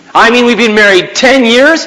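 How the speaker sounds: loud, high, accusing, complaining voice. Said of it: "You say".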